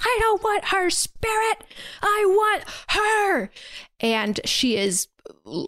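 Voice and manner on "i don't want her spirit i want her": put-on hysterical scream, higher pitched. Retelling a plot scene where she screams at Paul: imitating someone screaming. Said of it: "absolutely losing it, screaming at him".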